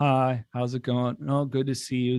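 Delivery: flat, very monotone, zombie-like delivery. Speaker acts out how his former self used to sound, flat zombie-like monotone. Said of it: "kind of a zombie, very monotone".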